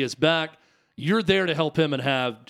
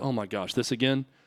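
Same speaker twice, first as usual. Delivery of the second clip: low, under-the-breath mutter, half to oneself; 4 semitones lower, 6 dB quieter than usual. Retelling another player's reaction to repeated questions in a meeting: imitating a muttered aside. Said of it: "under his breath".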